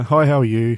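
put-on quiet, unconfident, timid voice. Retelling how a young checkout worker greeted customers: imitating a quiet, unconfident voice. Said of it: "he's not using a lot of volume in his voice".

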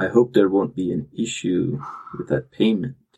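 grave, solemn, serious delivery. Narrating a character's reply to a player's character about payment, solemn. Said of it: "in solemnity says".

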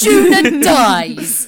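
play-acted scornful, contemptuous tone, loud and high. Recalling the contempt in my voice as Juna dies: re-enacting own past contempt. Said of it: "the contempt in my voice is just like".

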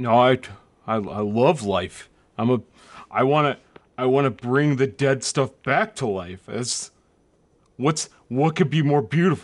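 very deep, dropped-down voice. Playing a character who answers that he loves life: [name]'s dropped puberty voice. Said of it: "What is this voice you're doing, [name]?".

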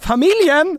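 shrill, very loud, high-pitched full-volume shout. Retelling the proposal, calling out to the families: imitating own shout. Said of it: "Så då skriker jag".

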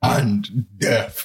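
solemn, ominous, dramatic, doom-laden intoning. Showing how a spirit's curse should sound: thundering voice. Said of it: "a thundering voice saying".

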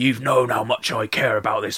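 put-on unintended slide into a West Country accent. Quoting Jack begging his friend for help: accidental West Country accent. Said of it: "I just almost did an accidental West Country then".

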